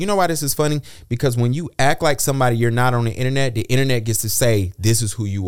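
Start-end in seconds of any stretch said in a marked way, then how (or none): none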